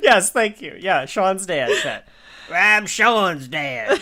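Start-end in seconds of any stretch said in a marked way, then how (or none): 2.5-4.0 strained put-on character voice pushed close to breaking. Naming an actor's TV role as Sean's dad: Chet Hunter voice. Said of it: "I'm not gonna do that voice anymore".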